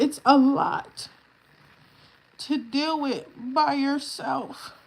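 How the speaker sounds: fighting back tears. Describing caring alone for a baby in a cast: holding back tears. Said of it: "I'm trying not to cry".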